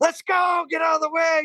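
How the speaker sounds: very high, screamed, pushing shout. Retelling riding on others' bumper downhill and yelling at them, retelling a scream. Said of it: "I started screaming at them".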